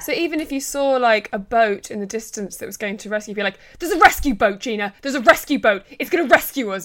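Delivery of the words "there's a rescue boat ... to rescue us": put-on agitated edgy voice, higher and louder. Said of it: "an edge in his voice".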